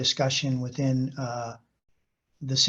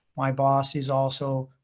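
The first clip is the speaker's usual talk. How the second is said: normal talking voice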